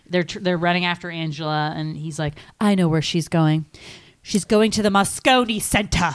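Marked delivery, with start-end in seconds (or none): 2.6-6.1 put-on British accent, stressing the word "Center". Quoting an actor's movie line, Jeremy Northam's British accent. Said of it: "Jeremy Northam's British accent".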